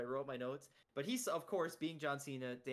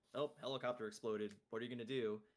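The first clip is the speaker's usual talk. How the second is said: acted dry, unbothered deadpan, flat level pitch; 3 semitones lower than usual. Recounting a show's finale, quoting Danny after a helicopter jump, imitating Danny's deadpan. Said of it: "Danny gives this deadpan like".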